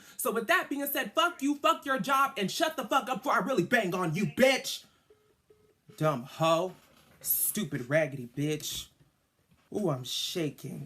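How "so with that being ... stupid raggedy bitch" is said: loud, shrill, enraged cursing. Telling someone off and quitting their job: furious. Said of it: "I'm so mad".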